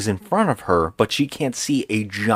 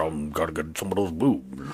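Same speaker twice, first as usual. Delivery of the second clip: very low, lecherous, leering cartoon wolf voice; 7 semitones lower, 8 dB quieter than usual. Retelling what the wolf says as he pounces: imitating the wolf's voice. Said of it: "he's like".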